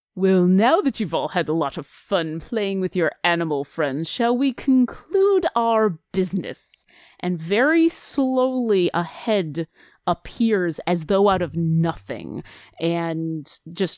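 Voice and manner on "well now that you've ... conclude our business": deep, low, menacing dragon rumble, quick. Narrating an unseen creature speaking to the listeners, low rumbling voice. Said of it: "you hear this low rumbling voice say".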